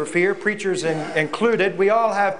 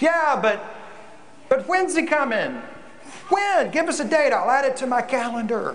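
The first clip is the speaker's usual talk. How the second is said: high, snarky, yelled-out delivery. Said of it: "some snarky person in the back yelling out".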